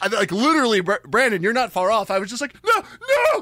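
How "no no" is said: acted very high, frantic, panicked scream. Speaker recounts hearing something tip in the car: retelling a scream. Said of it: "And I just started screaming".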